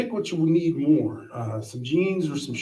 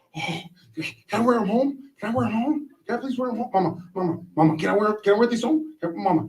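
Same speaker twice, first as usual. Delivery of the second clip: put-on eager little kid voice, high, excited, pleading; 8 semitones higher than usual. Retelling begging a parent as a child: imitating excited childish begging. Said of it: "I was so excited".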